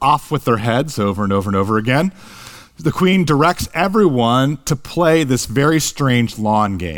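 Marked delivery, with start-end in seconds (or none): none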